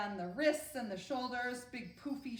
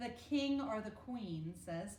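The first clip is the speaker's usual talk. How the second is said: normal talking voice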